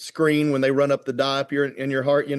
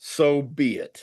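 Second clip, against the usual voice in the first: put-on booming voice, as loud as possible. Recounting lying prepped for the cardiologist, echoing a voice he heard; retelling the loudest voice possible. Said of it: "in the loudest voice possible".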